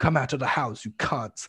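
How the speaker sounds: mock screaming, high and shrill. Retelling players in a game screaming at two enemies camped in a house: imitating players screaming. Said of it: "everyone's just screaming".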